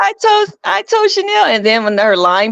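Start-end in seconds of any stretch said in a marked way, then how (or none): 0.0-1.4 mock very high, tearful sobbing with stammer. Retelling a reality show scene, imitating Lisa crying.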